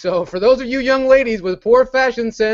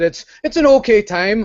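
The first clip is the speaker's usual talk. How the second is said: poor, terrible put-on Geordie accent. Quoting a friend's opinion of Play Expo in a Geordie impression. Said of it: "that's my Geordie impression".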